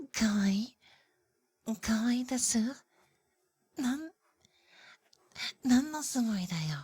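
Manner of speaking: very slow, cutesy put-on ooh voice. The speaker does the line the listener supposedly wants, in a cutesy voice. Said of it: "You want me doing a cute, like a cutesy ooh voice".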